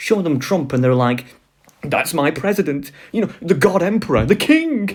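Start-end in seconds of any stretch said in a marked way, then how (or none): 1.8-5.0 put-on worshipful, fanatical, adoring gush, pitched high. Imitating Republicans shown a picture of Trump: imitating fanatical devotion. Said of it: "fanatical hatred and devotion".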